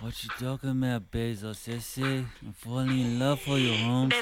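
put-on, gangster-style Mexican street accent. Admitting the only spanish they know, doing a sort of gangster mexican accent. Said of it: "sort of gangster Mexican".

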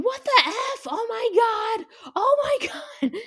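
play-acted very high, very slow, drawn-out screech. Retelling finding the bathroom occupied, imitating own screaming. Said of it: "So I'm screaming".

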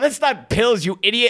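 high voice, laughing through the words. Retelling mocking a cop who mistook coke for pills, laughing while talking. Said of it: "I start laughing".

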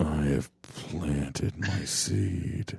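far-off whisper, very slow and drawn out. Voicing a distant voice heard in the scene: imitating a distant whisper. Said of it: "there's a distant voice that whispers".

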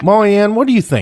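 loud, high-pitched yelling. Showing how double names are used when yelling at the kids: imitating yelling at a child. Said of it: "Usually when I'm yelling at them".

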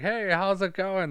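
fake American accent with pitch way up. Retelling the scene where the villain changes his voice: imitating Hans's fake American voice. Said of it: "when he changes his voice".

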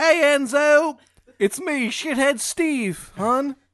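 loud, high, slow, bad Maryland accent. Narrating a Ravens fan character greeting Enzo, Shithead Steve with a bad Maryland accent. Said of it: "a really shitty Maryland accent".

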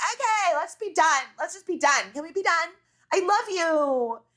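shrill, high yell, slightly fake-sounding. Retelling a hilarious moment when they finally agree, do it imitating Rinna yelling across. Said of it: "Rinna's yelling across".

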